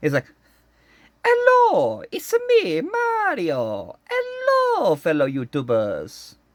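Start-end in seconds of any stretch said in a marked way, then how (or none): 1.2-6.3 very high-pitched, very slow, swooping sing-song voice. Goofing around with a clear Mario toy: Mario voice. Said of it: "I can partially do Mario's voice".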